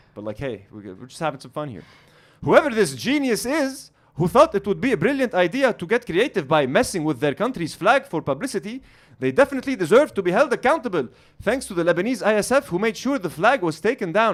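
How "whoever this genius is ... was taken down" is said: jokey put-on English accent, played for laughs. Reading a woman's tweet aloud for fun, in a put-on english accent. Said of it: "I'm just doing the accent for fun".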